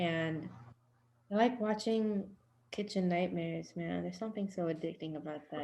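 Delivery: ashamed, sad, quiet, faltering and halting voice. Talking about what they like to watch, to another speaker: sad, ashamed tone. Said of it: "Why do you sound sad when you say that?".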